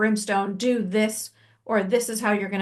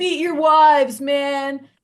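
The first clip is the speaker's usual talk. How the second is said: put-on loud, high-pitched, blustering bar-drunk voice; 5 semitones higher, 6 dB louder than usual. Retelling an atheist's comparison, voicing the drunk guy at the bar. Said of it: "he's that drunk guy at the bar and he's like".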